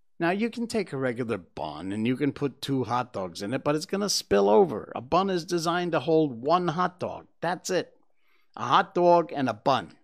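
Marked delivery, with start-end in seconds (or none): 8.6-9.9 slipping into New York accent. Talking about hot dogs and buns, slipping into a New York accent. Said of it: "I automatically slip into this New York accent".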